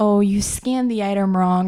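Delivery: ordinary delivery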